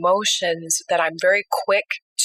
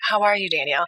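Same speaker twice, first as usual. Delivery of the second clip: imitated, mock-soothing, really calm voice. Client retells how the person she sees for appointments greets her, imitating a really calm voice. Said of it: "In that really calm voice that you have".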